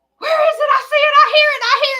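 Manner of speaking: very high, shrill, loud screaming. Retelling waking up in the night hearing a bug: imitating herself screaming. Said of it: "I'm up screaming".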